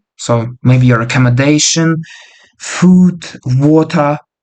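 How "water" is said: water said with British pronunciation. Listing basic needs like food, saying 'water' with a British accent on 'water'. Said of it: "I like uh, saying water in the British accent".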